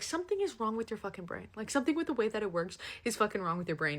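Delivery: plain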